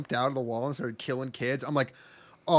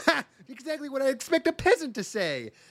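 squeaky, very high, frumpy little upstart voice; 10 semitones higher than usual. Retelling a show's dueling class scene, imitating a frumpy little upstart. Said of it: "And he goes".

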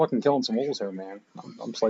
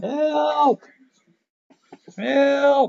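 very high, shrill, long-held screams; 7 dB louder than usual. A player asks to scream for help in the game, then screams for help. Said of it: "Can I scream help?".

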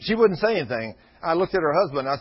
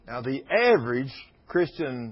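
normal talking voice

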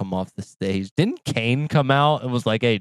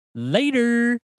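quick, very high-pitched, squeaky "later"; 13 semitones higher than usual. Signing off as the others showed: fast, high-pitched "later". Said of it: "say later in a fast and high-pitched voice".

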